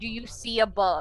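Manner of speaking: ordinary talk, nothing marked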